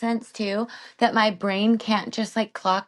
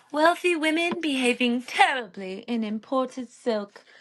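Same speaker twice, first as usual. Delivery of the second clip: put-on British accent, hammed up and exaggerated; 3 semitones higher than usual. Co-hosts opening their show, in a fake British accent. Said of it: "never, ever miss an opportunity to use a British accent".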